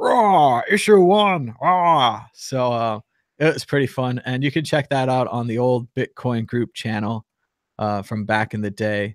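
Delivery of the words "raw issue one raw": loud, pitched-up yelling, delivered very slowly. Recalling acting normal, then switching into a John McLaughlin impression. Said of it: "the full McLaughlin impression".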